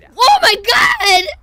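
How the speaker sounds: loud, drawn-out, frustrated, exasperated shout.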